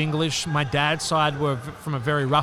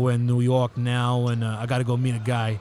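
tough, slow New York gangster accent; 4 semitones lower than usual. Showing an accent far from australian: new york gangster accent. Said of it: "let's say I was going to do like a New York gangster".

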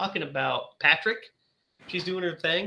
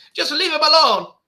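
put-on very high, very loud, shrill, slipping Irish accent; 10 semitones higher, 10 dB louder than usual. Retelling a movie character's line: imitating a slipping Irish accent. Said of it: "It's like an Irish accent or something".

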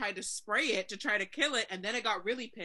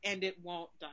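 ordinary delivery

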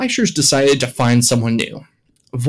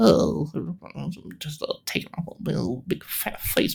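hushed, whispered, mumbled under-breath muttering; 3 semitones higher, 10 dB quieter than usual. Retelling a character's cheap shot the others don't catch, muttering under his breath. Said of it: "kind of under his breath".

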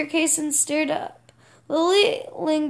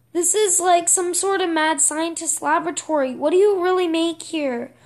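plain reading voice

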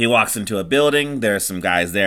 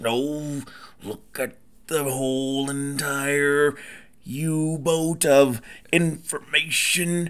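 gravelly wrestler promo voice, higher and quieter; 5 semitones higher, 6 dB quieter than usual. Joining in on an impression started by the other speaker: Macho Man Randy Savage voice. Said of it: "I can't do that for that long".

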